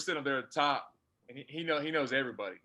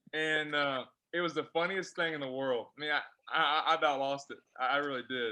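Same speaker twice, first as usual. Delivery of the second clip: normal talking voice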